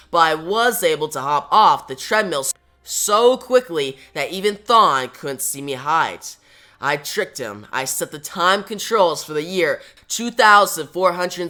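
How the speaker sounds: ordinary talk, nothing marked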